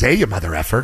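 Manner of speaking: cheery, chummy, buddy-buddy tone. Retelling how the coach greets him up close: imitating Pete Carroll smiling. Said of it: "He smiles and he gets up real close and he goes".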